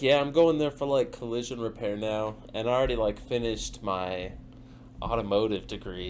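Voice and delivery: plain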